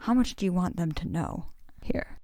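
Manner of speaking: hushed whisper, close to the ear. Pulling another character aside in a huddle: whispering. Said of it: "and I whisper into his ear".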